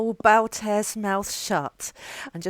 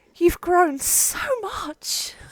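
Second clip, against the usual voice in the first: very slow, high, drawn-out, dreamy, starry-eyed adoration; 6 semitones higher than usual. Speaking in character to Henrik, starry-eyed. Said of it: "with just, like, starry eyes and be like".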